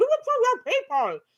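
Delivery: very loud, very high, shrill screech. Imitating the fairy godmother from Shrek eating a burrito: shrill screaming Fairy Godmother voice. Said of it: "she screams that shrill voice".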